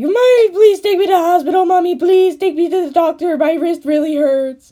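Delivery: put-on shrill, very high, loud wailing child's crying. Retelling waking parents at night with a hurt wrist: imitating own crying childhood plea. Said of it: "I didn't say it like that. It was like".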